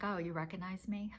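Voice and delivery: soft, play-acted, lightly sarcastic tone. Retelling own remark at a funeral to someone who didn't recognize them: retelling own sarcastic line. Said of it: "I had a little sarcasm in there".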